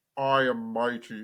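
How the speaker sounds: very low, deep, menacing voice. Describing the villain from the nineties X-Men cartoon: menacing deep Apocalypse voice. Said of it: "His voice is menacing".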